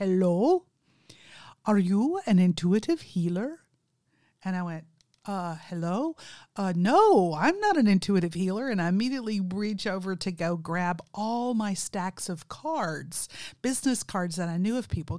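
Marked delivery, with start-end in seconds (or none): 0.0-3.6 put-on Indian English accent, laid on strong. Retelling a landline call, the speaker quotes the man on the line: strong Indian accent. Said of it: "he has a very strong Indian accent from India".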